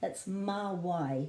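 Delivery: slow, careful, teaching pronunciation of "mā wai".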